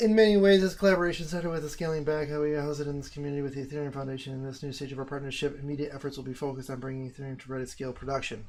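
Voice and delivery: rushed, very fast, loud, rattled-off reading. Reading a written announcement aloud, reading very fast. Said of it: "I don't want to keep reading that fast".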